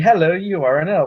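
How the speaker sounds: put-on mismatched, off-target English accent. Retelling what they told him while he was playing an elf, wrong English accent. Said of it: "every time you do that impression, you use the wrong English accent".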